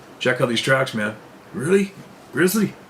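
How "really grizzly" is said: mock Mexican accent, much higher. Retelling his hunter's reaction to the grizzly tracks: attempted Mexican accent. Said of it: "I can't mimic the Mexican accent very well".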